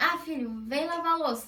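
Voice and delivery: angry, cross, scolding parent-like tone. Showing one way a parent might teach a child, angry, scolding tone. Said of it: "tipo bravo".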